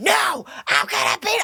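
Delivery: acted angry, defiant tone. Retelling refusing her mother's order to get off the game, acting out angry defiance. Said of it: "I was so mad".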